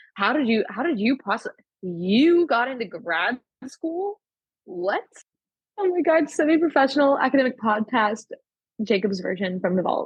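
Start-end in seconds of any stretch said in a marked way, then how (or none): 0.1-5.0 stunned, incredulous, disbelieving delivery. Acting out a reaction on request: mock disbelief. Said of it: "say it with more, like, disbelief".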